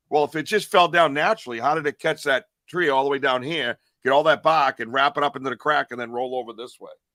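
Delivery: normal talking voice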